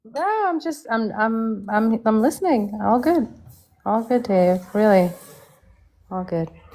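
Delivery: depressed-sounding voice with a stumbling start. Asked why they keep sighing, the speaker insists all is good, sounding depressed. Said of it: "You sound depressed".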